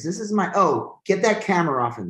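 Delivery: sudden, high-pitched screaming outburst. Retelling a viral video of a complaining customer, imitating a woman screaming. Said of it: "And she screams".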